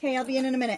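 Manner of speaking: loud high yell. Speaker yelling a reply to someone calling them in. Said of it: "I didn't mean to yell in your ears".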